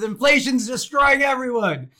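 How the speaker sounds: loud, high-pitched yelling. Retelling a meme where a dad yells at his son: imitating a dad yelling. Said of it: "This guy's yelling at his son".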